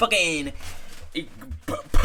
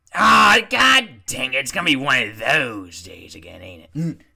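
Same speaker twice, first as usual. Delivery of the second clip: loud, odd, strange put-on character voice; 3 semitones lower, 5 dB louder than usual. Voicing a character during a group scene, weird character voice. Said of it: "That was a weird Insam voice".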